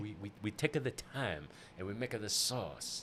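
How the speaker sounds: put-on accent heard as French. Joking about a chef's line, the speaker uses a fake accent heard as french. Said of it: "that's French".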